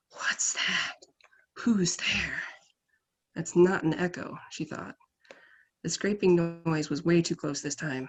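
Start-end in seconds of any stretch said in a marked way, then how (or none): 0.2-2.4 slow, airy, breath-filled voice. Narrator reads an unseen voice calling out to Moira, breathy and soft. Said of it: "breathy and soft".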